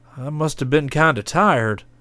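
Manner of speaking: embarrassed, sheepish, abashed tone. He wakes to find she has cooked breakfast while he slept, sheepish. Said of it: "he said sheepishly".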